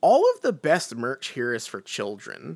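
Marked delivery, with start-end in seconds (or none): none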